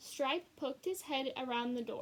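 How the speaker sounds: ordinary delivery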